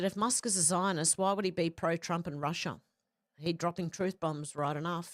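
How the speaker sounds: plain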